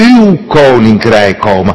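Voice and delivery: heavy stress on the word uw. Discussing a line of a prayer in Dutch: strong emphasis on uw. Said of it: "Alle nadruk op uw".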